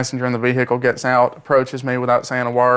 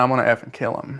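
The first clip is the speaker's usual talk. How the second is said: ordinary delivery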